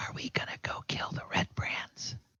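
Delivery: put-on unvoiced whisper in a boy's voice. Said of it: "he whispers in your ear".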